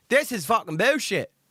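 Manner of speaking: slipping into an English accent. Mid-rant, an English accent slipping out. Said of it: "I don't know where my English accent just came from".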